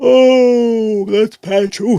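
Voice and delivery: words stretched through a yawn, very loud, slow. Speaker patching someone in after a long day, yawning while talking. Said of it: "sorry for yawning".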